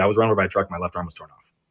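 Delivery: put-on flat, deadpan tone. Retelling what they used to tell people as a seven-year-old, retelling a deadpan reply.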